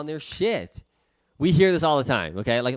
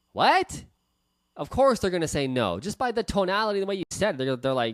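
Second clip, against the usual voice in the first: plain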